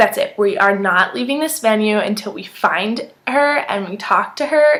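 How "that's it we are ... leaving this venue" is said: usual speaking voice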